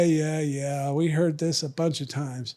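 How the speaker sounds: normal talking voice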